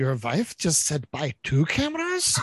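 put-on heavy German accent laid on thick, swooping. Retelling what the guy behind the counter said, in a thick German accent. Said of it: "in his thick German accent is like".

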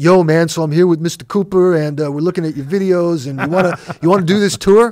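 put-on New York accent. Retelling a phone call from Tommy: imitating Tommy's New York accent. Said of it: "Him with his New York accent".

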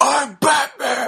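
high, loud, belted superhero shout.

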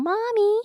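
put-on very high-pitched baby voice. Acting out how he tried to sound like a baby: babyish voice. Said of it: "he would pitch his own voice up. He would try to sound like a baby".

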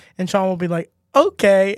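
ordinary talk

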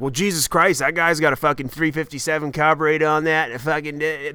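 put-on down-east Maine accent. Comedian retelling what onlookers say about a guy's bike, in a Maine accent. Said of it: "why am I doing the Maine accent?".

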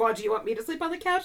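put-on huffy woman voice. Retelling a favorite scene where Gladys gets huffy, as mock-huffy Gladys. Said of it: "Gladys gets all huffy".

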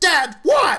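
play-acted shrill squealing yell, very high. Describing shouts that don't sound like the film's star: imitating a squealy shout. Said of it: "that squealy, you know, shout".

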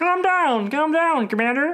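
very high-pitched cartoonish spaceman voice. Voicing the Martian friend who calms the commander: Marvin the Martian voice. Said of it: "I was going for Marvin the Martian".

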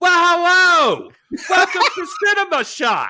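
very high, drawn-out, sing-song theatrical character voice. Doing a podcast intro like everyone talks in a John Waters movie. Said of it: "I was thinking of how everybody talks in a John Waters movie, where it's just like".

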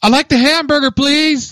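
abrupt, sudden, very high-pitched blurt. Describing how she orders food with others, imitating her blurted order. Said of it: "Just blurts it out".

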